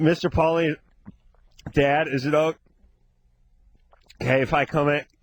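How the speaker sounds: words broken by gulps of air. Speaker demonstrates how he wants a character to talk, gulping big breaths of air. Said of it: "he takes those big gulps of air".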